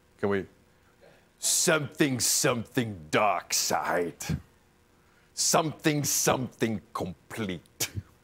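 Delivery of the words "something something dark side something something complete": voice dropped low and dragged out slowly. Host, before letting the guest go, does an Emperor impression. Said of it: "That's my Emperor impression".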